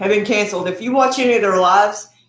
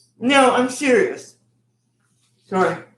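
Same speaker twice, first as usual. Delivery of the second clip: talking with mouth full, higher pitch; 3 semitones higher than usual. Answering another speaker's joke, talking with mouth full. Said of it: "Eat with my mouth full here".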